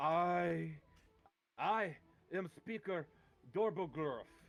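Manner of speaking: slow, deliberate dwarf voice. Voicing a dwarf who steps forward to greet the party: dwarf speaker voice. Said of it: "he comes up to you and goes".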